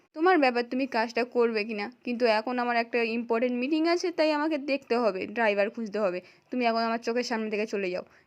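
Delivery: ordinary delivery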